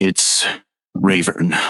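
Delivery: whispered speech. Playing a captain leaning in to whisper a family name: whispering. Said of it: "and he whispers into your ear".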